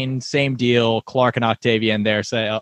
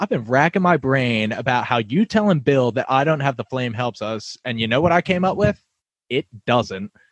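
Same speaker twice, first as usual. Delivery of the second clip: ordinary delivery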